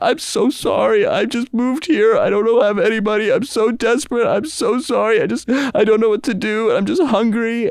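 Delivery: put-on wailing, very high sobbing, bawling. Retelling how a young stranger begged him for money: imitating a man bawling. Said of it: "And starts bawling, crying".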